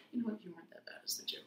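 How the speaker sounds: soft whispered voice. Retelling whispering a joke into someone's ear during a hug: retelling a whisper. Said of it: "I whisper in his ear".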